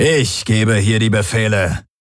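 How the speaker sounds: slow, snorting delivery. A narrator reads the warlord's retort to another man, snorting. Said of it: "schnaubte der Feldherr".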